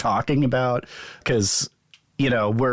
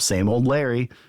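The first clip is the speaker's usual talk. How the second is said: ordinary delivery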